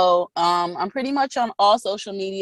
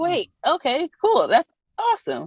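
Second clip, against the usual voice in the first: much higher pitch, breezy, mock-casual. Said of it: "I'm just like".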